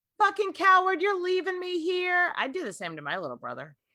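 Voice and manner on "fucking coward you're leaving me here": shrill, very high, angry accusing scream. Retelling how a half sister screamed at him as he left, retelling a scream. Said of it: "literally screaming at him, being like".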